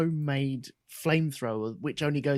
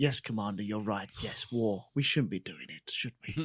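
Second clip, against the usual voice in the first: put-on low, tired, weary tone full of sighs; 5 semitones lower, 3 dB quieter than usual. Retelling what the big boss said to the Commander, the speaker imitates him sighing. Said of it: "he's just like sighing".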